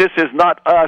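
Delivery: acted-out high-pitched yelling. Retelling a man in a cinema pointing at the screen: imitating someone yelling. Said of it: "yelled out".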